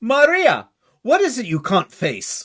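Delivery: put-on loud, high Austrian accent. Retelling a scene where she speaks to Maria, in an Austrian accent. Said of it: "it's with an Austrian accent".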